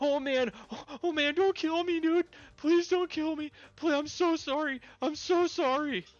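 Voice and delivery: shrill, very high, very loud, frightened pleading. A game master voices a scared guy facing the three players, scared pleading. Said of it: "shaken, scared looking guy".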